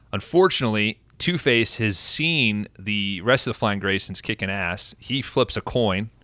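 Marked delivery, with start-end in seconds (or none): none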